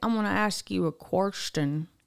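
put-on Southern accent, male voice. Retelling how a man at the Kingdom Hall talked: imitating a Southern man. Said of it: "He was Southern".

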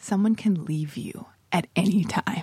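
put-on serious, grave delivery. Retelling what the other speaker said on meeting, imitating a serious delivery. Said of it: "it was so serious how you delivered it".

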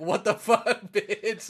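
high-pitched, frantic, freaked-out outburst. Retelling a manga scene where a character freaks out: imitating someone freaking out. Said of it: "and she's losing it".

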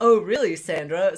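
mock smug, pleased-with-oneself, self-satisfied tone. Retelling a movie scene where a character answers the tanning girl: imitating a smug character. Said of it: "he just has this smug fucking look".

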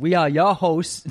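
mock Boston accent on "your". Imitating the co-host's intro line: imitating a Boston accent on "your". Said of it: "like a super Boston accent on the your".

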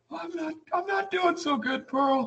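very high-pitched, weepy, tearful sobbing. Pleading with the landlord for more time: acted crying. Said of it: "Don't make fun of me crying".

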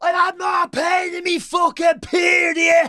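very high shriek at full voice. Retelling what a fan at the match screamed: imitating a woman screaming. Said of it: "top of her voice screamed".

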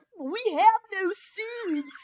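high-pitched, very slow, nerdy yell. Discussing a film's skinny-dipping scene, the speaker quotes it in a Crispin Glover nerd voice. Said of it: "in the nerdiest voice that is ever".

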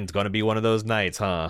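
fake flat delivery, very fast. Recapping a show episode, quoting Rose: imitating Rose's deadpan. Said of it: "is her just deadpan".

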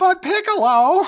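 high, loud, belted heroic cry. Trading anime character voices with a friend, doing a Goku impression. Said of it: "I can't do a good Goku".

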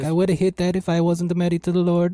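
put-on, high Italian accent. Joke about what the Pope could have said, in a Borat-like Italian Pope accent. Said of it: "What the fuck accent was that?".

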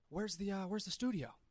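very quiet, hushed, out-of-breath muttering. Retelling what a man asked him quickly in the kitchen: imitating breathless muttering. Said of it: "kind of like out of breath".

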